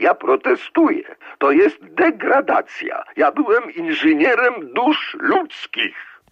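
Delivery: thin, very high cried-out exclamation. A writer jumps up to protest an official's words to writers, exclaiming in a thin voice. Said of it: "cienkim głosem wykrzyknął".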